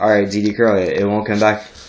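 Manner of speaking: ordinary delivery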